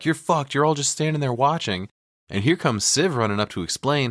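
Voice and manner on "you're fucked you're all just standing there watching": put-on, high, furious yelling, losing it. Retelling a scene of someone yelling at the whole village: imitating someone yelling. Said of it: "He's yelling at the whole village".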